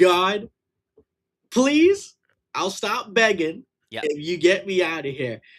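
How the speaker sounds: mock imploring, begging, pleading tone. Imitating Phil looking up and begging God: imitating Phil begging God. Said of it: "He's looking up right now like".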